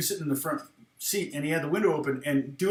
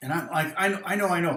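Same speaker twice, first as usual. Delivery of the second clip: ordinary talk, nothing marked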